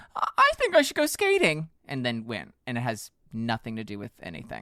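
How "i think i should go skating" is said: swooping, sing-song thinking voice. Imagining a student in her dorm at UCLA, impression of someone having a thought. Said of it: "not an accurate depiction of what Alyssa Liu sounds like".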